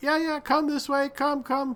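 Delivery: very high, clean shout from a distance. Voicing a character who calls out in Draconic toward the listeners, shouting toward you. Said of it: "in Draconic sort of shouting in your direction".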